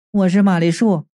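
ordinary delivery

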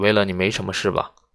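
ordinary delivery

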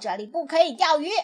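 loud, yelling voice. Narrator reads a duck calling out to a kingfisher, loudly yelling. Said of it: "它大声嚷道".

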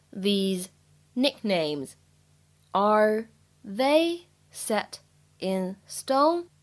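very slow, careful, drawn-out reading.

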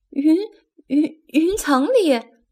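stuttering in fright. Echoing what another character just said, scared stammering. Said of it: "宝儿吓得都结巴了".

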